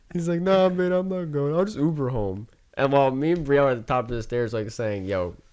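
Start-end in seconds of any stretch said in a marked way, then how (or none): 0.4-2.5 put-on heavy drunk-sounding voice, pitched up. Retelling how Peter refused to leave with them, imitating Peter drunk. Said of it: "Like in a drunk ass voice".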